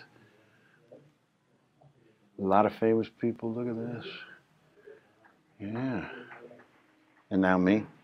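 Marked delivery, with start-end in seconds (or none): 3.5-6.1 much softer hushed talk. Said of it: "I gotta keep my voice down".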